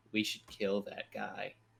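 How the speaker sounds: soft, hushed stage whisper close at the ear. Player's character walks over to Amos, half-whispering in his ear. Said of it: "kind of whisper in his ear".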